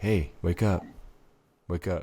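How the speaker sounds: soft, hushed, close real half-whisper. Showing how to wake a sleeping person, half-whispering. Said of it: "actual whisper".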